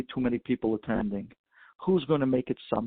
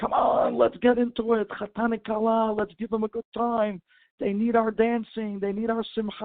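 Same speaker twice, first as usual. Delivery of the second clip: very high, rousing scream; 10 semitones higher than usual. Retelling a story where the rabbi pulls guests to dance: imitating a rabbi screaming. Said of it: "And he's screaming".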